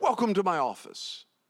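put-on Ethiopian accent. Retelling what a gentleman in an Ethiopian restroom said, in an Ethiopian accent. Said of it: "he said in his Ethiopian accent".

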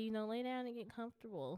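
plain

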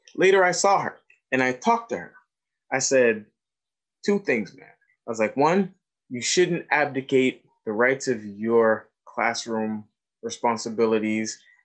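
ordinary talk

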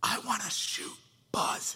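soft whisper under the breath. Speaker retelling what the boy whispered to him, retelling a whisper. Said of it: "And he whispers".

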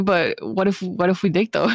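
normal talking voice

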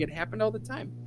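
high, casual, matter-of-fact, unbothered, offhand tone. Retelling what she told them about the room: imitating a nonchalant tone. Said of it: "she said it so nonchalant".

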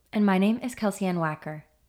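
mellow public radio host cadence. Podcast co-hosts introduce themselves, NPR host cadence. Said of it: "Do we sound like we're on NPR?".

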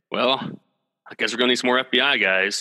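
mock deadpan delivery, flat and expressionless. Discussing a movie, quoting a character's line, imitating deadpan delivery. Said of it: "I just love like his deadpan delivery".

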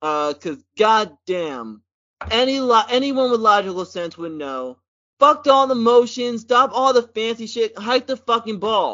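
worked-up, heated, high-pitched angry rant. Talking football with another speaker; angry ranting. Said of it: "express my anger".

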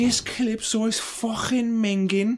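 put-on Liverpool accent, very high-pitched and slow. Quoting a woman from a video the friends know, scouse accent. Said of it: "That's the Scouse accent".

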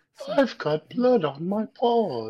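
slightly high, storybook cartoon bear voice. Joking about the bear talking in a non-Disney version, Winnie the Pooh voice. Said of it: "he had the Winnie the Pooh voice".

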